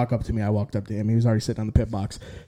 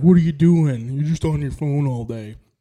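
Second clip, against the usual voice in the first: teasing, ribbing, needling tone; 3 semitones higher than usual. Retelling a pit crew guy's usual jab: imitating a pit crew guy teasing. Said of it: "that was a pretty good, uh, imitation".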